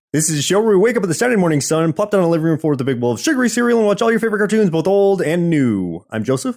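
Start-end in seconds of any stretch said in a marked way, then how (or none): 0.1-5.2 breakneck rapid-fire patter, pitched up. A host opening the Saturday Morning Cartoon show, really fast. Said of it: "you said the one part like really fast".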